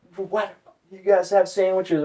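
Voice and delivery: high, screaming drill-instructor yell. Retelling a drill instructor catching recruits with sandwiches, imitating a screaming drill instructor. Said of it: "starts screaming at us like".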